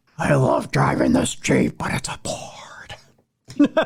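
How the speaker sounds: breathy, half-whispered puppet character voice. Joking about a Jeep, the speaker ends up in a Gonzo voice. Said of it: "Why I sound like Gonzo".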